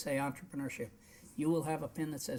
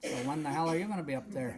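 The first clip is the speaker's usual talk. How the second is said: ordinary talk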